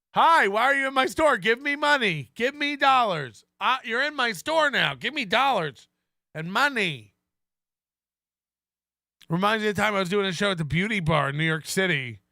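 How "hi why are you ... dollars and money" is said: high-pitched, desperate, half-mad salesman voice. Mocking a store owner's pitch to customers: imitating Aaron Imholter. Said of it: "sales legend Aaron Imholter".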